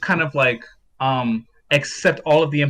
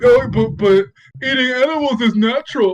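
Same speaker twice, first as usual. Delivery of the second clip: mocking dumb voice, higher and louder; 9 semitones higher, 5 dB louder than usual. Mocking how an opponent argues: imitating a stupid-sounding voice. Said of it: "they always give 'em, like, a tard voice".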